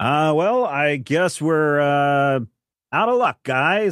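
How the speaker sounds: drawn-out showy announcing. Voicing a character looking around at the rooftops: saying it kinda loud. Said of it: "he says it kinda loud".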